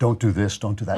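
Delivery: ordinary delivery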